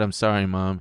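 ordinary talk

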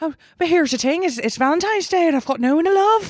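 Irish-accented voice. Asked to do it again, the speaker shows off an Irish accent. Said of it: "I do Irish too".

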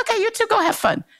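high, friendly, warm fatherly voice.

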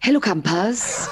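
rough, put-on gravelly voice. Speaker does a Hi-de-Hi impression in a Hi-de-Hi gravelly voice. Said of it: "Can I do my Heidi Hi impression? ... the gravelly voice helps that".

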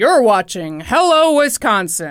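booming, loud local-news style announcer voice. Describing a local news show intro: imitating a booming announcer voice. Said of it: "They've got the booming voice".

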